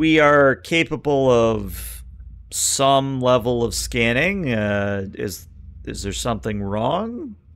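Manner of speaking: slow, halting, hesitant voice.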